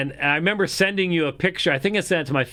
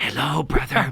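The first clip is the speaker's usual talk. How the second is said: put-on whisper; 2 semitones lower than usual. Retelling late-night messages from Tobias: imitating Tobias whispering. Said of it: "it's Tobias whispering".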